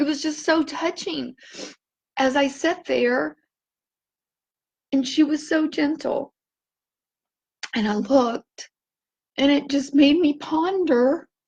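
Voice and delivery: tearful, crying while talking. Sharing a touching moment with someone gentle, crying while talking. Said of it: "and I know I'm crying".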